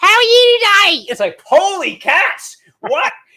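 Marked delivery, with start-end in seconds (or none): 0.0-1.0 poor fake Australian accent, loud and high. Speaker attempts an Aussie greeting, then apologizes: bad Australian accent. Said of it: "That's the worst accent".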